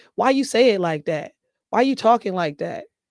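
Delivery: normal talking voice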